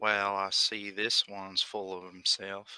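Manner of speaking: soft muttering under the breath. Voicing a character reacting to a boastful arrival: muttering under his breath. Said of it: "Under his breath".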